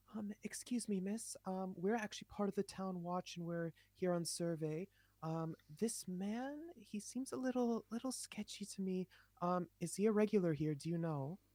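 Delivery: discreet, hushed half-whisper. Asking a woman in character whether a hooded man is a regular: half-whispering. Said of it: "I stand up and I whisper to her".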